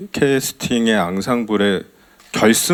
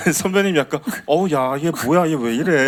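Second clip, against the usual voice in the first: put-on bewildered, taken-aback elderly voice, pitched higher; 5 semitones higher than usual. Describing how the senior reacted at their first meeting, imitating a bewildered senior. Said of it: "약간 이런 느낌".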